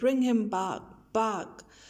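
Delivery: ordinary delivery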